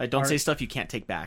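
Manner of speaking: ordinary delivery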